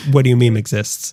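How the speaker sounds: plain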